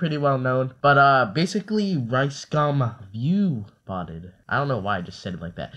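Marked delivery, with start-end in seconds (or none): 3.1-4.3 heavy, stretched, slow V in view. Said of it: "put so much emphasis on the V".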